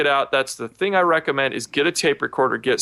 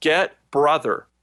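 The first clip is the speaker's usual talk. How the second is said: strained, pushed whisper. Retelling a voice heard right up against the microphone: imitating a forced whisper. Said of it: "a forced whisper".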